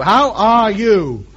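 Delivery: very slow, over-clear, each word spelled out.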